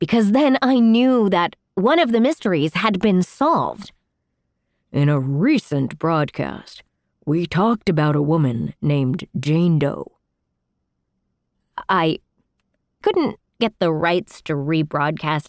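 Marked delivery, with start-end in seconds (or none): 4.9-10.1 put-on announcer-style TV host broadcast delivery. Doing the host's line without rights to the audio: Unsolved Mysteries host voice. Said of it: "so I just did that voice myself".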